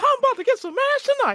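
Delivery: put-on high cartoon mouse voice. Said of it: "hit the Mickey Mouse voice".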